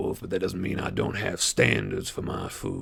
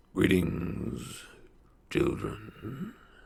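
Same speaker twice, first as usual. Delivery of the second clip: growling voice. Narrator reads a robed figure greeting the children, low-pitched growl. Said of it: "the figure growls, a low-pitched noise you can hear in your very bones".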